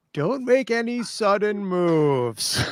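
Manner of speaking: very slow, deliberate delivery, words drawn out. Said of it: "I yell at him in Russian".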